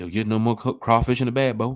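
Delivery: put-on rural country accent. Telling a story to others, repeating the last line in a different voice; country voice. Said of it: "I'm using my country voice".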